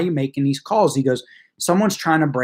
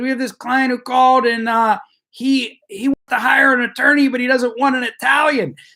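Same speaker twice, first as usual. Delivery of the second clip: play-acted loud hollering, as if across a room; 9 semitones higher, 4 dB louder than usual. Retelling how the paralegal called out to the office: imitating someone yelling. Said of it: "she starts yelling out to everybody in the office".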